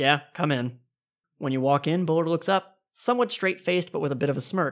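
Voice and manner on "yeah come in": curt, brusque delivery. Voicing the director answering a knock at the office door: curt. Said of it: "you hear a curt".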